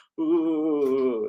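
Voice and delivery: eerie, haunting, drawn-out spooky ghostly ooh. Announcing a Halloween Spooktacular concert: ghost impression on ooh. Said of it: "that's my impression of a ghost".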